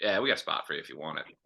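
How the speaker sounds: sarcastic, lazy, offhand tone. Imagining a coach's recruiting phone call: imitating Mike Leach's sarcastic lazy tone. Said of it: "just one of the most sarcastic, like, lazy phone calls".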